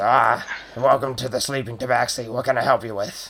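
goblin barkeep character voice. Voicing a goblin behind the counter greeting a customer: goblin barkeep voice. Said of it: "He looks over at you and says".

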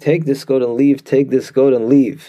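ordinary delivery

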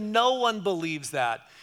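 openly disbelieving, incredulous tone, full of attitude. Retelling a guy challenging a girl's faith: imitating incredulous tone. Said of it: "with this attitude of incredulity".

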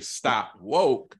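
ordinary delivery

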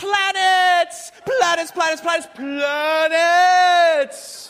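put-on frantic toddler scream, very high, shrill and loud. Parent retelling his son in a store, imitating a child screaming. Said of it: "And he's screaming".

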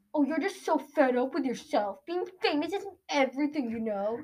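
sneering, scornful professor voice. Talking about a script, one speaker slips into a Snape voice. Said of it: "Snape would just be like".

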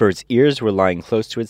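ordinary delivery

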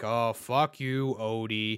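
very slow, deep, dragged-out cartoon cat drawl. Describing how Garfield should sound, the speaker does a deeper, slower Garfield voice. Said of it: "a deeper, slower tone".

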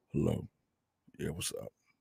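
very low, very quiet, deep, groggy just-woke-up croak. Answering a phone call at seven in the morning, groggy just-woke-up voice. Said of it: "This is my I just woke up voice".

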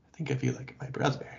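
bashful, shy, breathy hushed near-whisper. Describing a scene, the speaker acts out a man's line, mimicking a shy, quiet line. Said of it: "looks down super shy and says really quietly".

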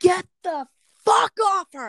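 very high-pitched shouting yell. Recounting running back into a house as a kid, the speaker retells own yell. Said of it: "and I yelled".

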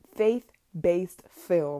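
very slow, drawn-out delivery.

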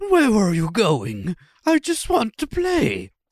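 horrible, slow, sing-song cartoon bear voice, swooping up high and dragged. Voicing a bear from a video that wants to play: horrible Winnie the Pooh impression. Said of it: "horrible Winnie, Winnie the Pooh impression".

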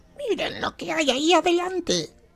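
unintentional put-on creature voice. Player voicing their character calling out to the group, in a Gollum-like voice. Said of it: "Pero es bastante golum".

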